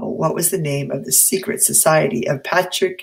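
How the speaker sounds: ordinary delivery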